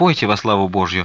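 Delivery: plain reading voice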